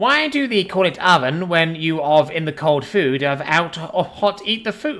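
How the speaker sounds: pitiful, pathetic, squeaky, squealy alien creature voice. Prompted by someone else, the speaker tries the line in a pathetic, squealy alien voice. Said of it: "squealy alien voice".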